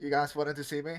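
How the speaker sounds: blocked nasal sound with nostrils pinched shut. Playing a character holding his broken nose: pinched-nose voice. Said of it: "I sound a bit like, when it's, like, pinched".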